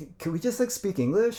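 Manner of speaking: put-on, very high California valley girl accent. Retelling a coworker asking to switch to English: imitating a California Valley girl accent. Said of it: "almost California Valley girl".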